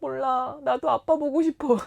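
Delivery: mock crying. Retelling what they said at dinner while crying: retelling own crying words. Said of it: "막 울면서".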